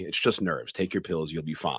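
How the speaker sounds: normal talking voice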